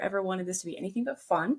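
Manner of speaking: plain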